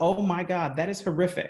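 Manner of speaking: ordinary talk, nothing marked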